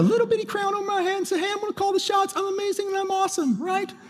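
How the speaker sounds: put-on high, soft, childish little-kid voice. Speaker acting out his own urge to call the shots, in a little fifth-grade voice. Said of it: "That's my little fifth grade voice".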